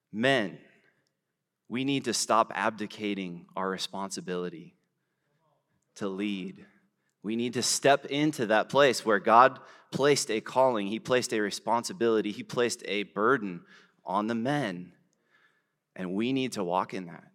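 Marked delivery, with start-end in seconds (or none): none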